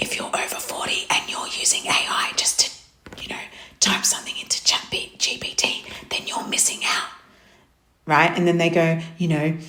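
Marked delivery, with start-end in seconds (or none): 0.0-8.3 breathy, hushed, whispered sales-pitch voice. Speaker mocking online ads aimed at people over forty; imitating a whispered ad. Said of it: "they whisper, it's so annoying, ready?".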